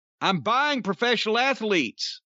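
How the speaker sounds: ordinary delivery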